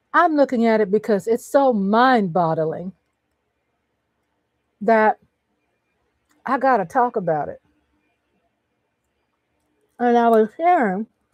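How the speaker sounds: talking while chewing, mouth full. Talking on mic about watching things with her hubby, chewing candy while talking. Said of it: "I'm biting, chewing my candy in your ear".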